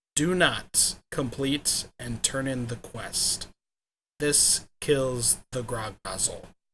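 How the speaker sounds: very slow, clear, word-by-word delivery. Warning not to turn in the grog nozzle quest, very slowly and clearly. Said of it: "I'm going to say this as slowly and as clearly as possible".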